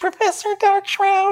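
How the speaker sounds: very high, tiny, barely audible squeak. A little man locked in a cage answers who put him there, in a tiny voice. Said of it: "his voice is so tiny, you can barely hear him".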